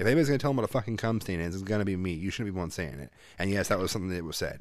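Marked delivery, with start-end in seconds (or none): none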